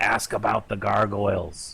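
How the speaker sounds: whispered in character. Playing a servant, quietly telling another character to ask about gargoyles: whispering in character. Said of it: "I kinda whisper to her and I say".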